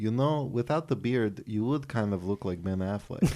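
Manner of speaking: put-on light Romanian accent. Retelling what mom said while watching a movie: imitating mom's slight Romanian accent. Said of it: "she's got a bit of a Romanian accent".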